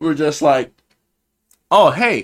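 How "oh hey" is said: mock aggressive tone, higher pitch and louder. Retelling how people at the bar called out: imitating an aggressive greeting. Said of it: "in a kinda, like, aggressive way".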